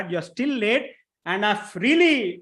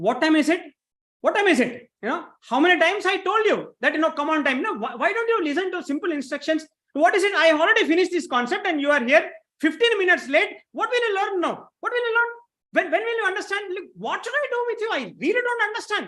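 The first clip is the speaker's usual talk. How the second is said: angry yelling, much higher pitch; 9 semitones higher than usual. In a role play, a teacher scolds a student who came late, angry teacher yelling. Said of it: "do I have your permission to yell on you".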